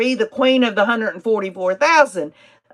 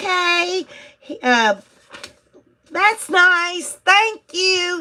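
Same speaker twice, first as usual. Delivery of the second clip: put-on sweet, high schoolgirl voice; 9 semitones higher than usual. Describing a woman after her cross-examinations, the speaker quotes her: imitating a schoolgirl voice. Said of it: "She'd say it like she was a schoolgirl".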